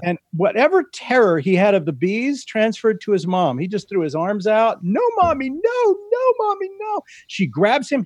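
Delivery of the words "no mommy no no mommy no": mock, very high, rising, terrified little-kid voice. Recounting a boy frightened by bees as his mom reaches him, imitating a terrified child. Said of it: "he's terrified".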